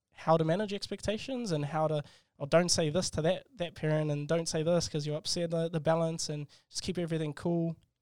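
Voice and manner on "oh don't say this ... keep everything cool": ordinary delivery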